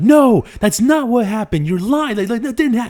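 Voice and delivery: very high, shrill, loud, outraged furious yelling. Retelling classmates yelling at the teachers: imitating classmates yelling back. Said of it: "yelling at them".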